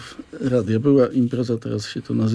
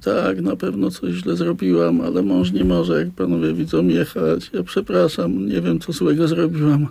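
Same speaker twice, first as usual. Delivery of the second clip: acted-out crying, high, swooping, tearful, apologetic pleading; 5 semitones higher than usual. Retelling what a woman stopped by police said, imitating someone crying. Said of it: "Ona się rozpłakała".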